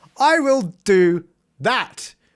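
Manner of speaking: strange, off-kilter, unusual intonation throughout. Speaker recounting agreeing to join a Twitch challenge, weird inflection. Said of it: "such a weird inflection there".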